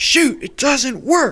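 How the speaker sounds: put-on ugly shouting voice. Retelling a scene where Bob shouts about the machine: imitating Bob's ugliest shouting voice. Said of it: "he shouts in his ugliest voice".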